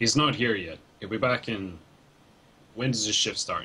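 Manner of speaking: slow, said through a sigh. Narrating a game scene, the speaker voices the taller guard answering, sighing while speaking. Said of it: "just kind of sighs and says".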